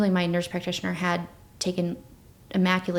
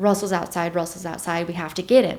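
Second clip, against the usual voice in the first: ordinary talk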